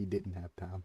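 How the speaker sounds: put-on documentary narrator voice. A gamer comments on a play mid-match: narrator voice. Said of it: "Narrator voice".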